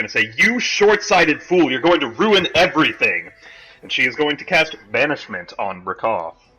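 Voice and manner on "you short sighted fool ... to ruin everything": furious, angry put-on shouting. Voicing a character who shouts at a fool ruining everything: in-character shout. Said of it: "she's gonna start shouting at Brakal".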